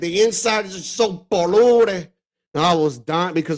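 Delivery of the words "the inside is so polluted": slow, high, peculiar movie-character delivery. Retelling a funny line from a movie, imitating the character's accent. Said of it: "the way he said it".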